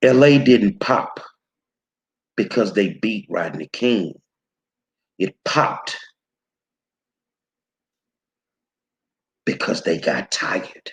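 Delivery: slow, deliberate spelled-out pace, very low voice. Speaker addressing a listener directly: said slowly. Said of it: "I'm gonna say this slow for you".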